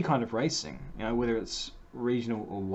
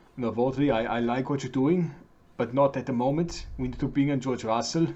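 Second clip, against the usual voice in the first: put-on Austrian accent; 5 dB louder than usual. Imagining what Toto should tell Velocity, Toto impression. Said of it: "the best sort of Totonator accent thing".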